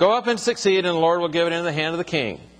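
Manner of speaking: sarcastic, mocking tone of voice.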